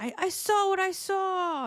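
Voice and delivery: put-on very high, very slow, drawn-out yell. Describing a vision of a restrained man being taken away, retelling his yell. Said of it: "somebody yelling like".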